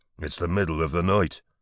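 ordinary delivery

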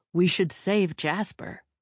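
ordinary delivery

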